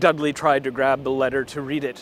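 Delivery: ordinary delivery, nothing marked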